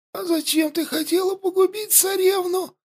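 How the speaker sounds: put-on wheezy, hoarse, very high-pitched rasp. Narrator reads Yandi's reply to her aunt, who grips her throat, hoarse wheezing. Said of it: "просипела Янди".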